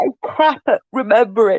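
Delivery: speaking while yawning. Mid-conversation, talking through a yawn. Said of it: "Sorry, I'm yawning".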